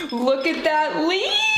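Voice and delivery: high, squealing, excited scream.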